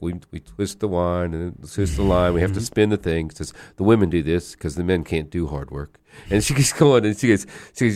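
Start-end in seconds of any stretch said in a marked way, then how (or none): 0.0-3.3 dry, expressionless, flat deadpan delivery. Speaker retells a woman showing how they spin yarn: imitating her deadpan delivery. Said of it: "she's like deadpan".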